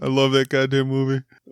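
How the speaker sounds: laughing while talking. Apologizing for laughing uncontrollably while trying to talk: laughing while talking. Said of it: "I'm having a moment here".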